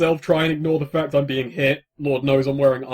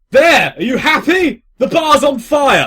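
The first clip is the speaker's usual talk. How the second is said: very high, loud, angry shouting yell; 11 semitones higher, 8 dB louder than usual. In a game scene, a character yells at a man after the bar erupts in flames; yelling angrily. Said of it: "I just yell at him".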